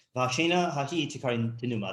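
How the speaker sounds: ordinary delivery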